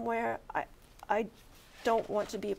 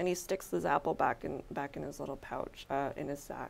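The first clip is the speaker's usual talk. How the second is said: usual speaking voice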